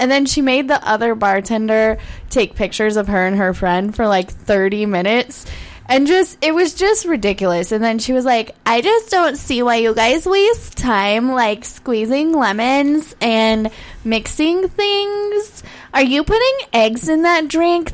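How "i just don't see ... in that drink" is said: mock tipsy, drunk girl voice. Retelling what a woman at the bar said to the bartenders, imitating a drunk girl. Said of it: "my drunk girl voice".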